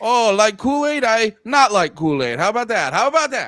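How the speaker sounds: put-on Puerto Rican accent. Joking with co-hosts about bringing mothers into it, in a kind of put-on Puerto Rican accent. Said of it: "You kind of went like uh, Puerto Rican there".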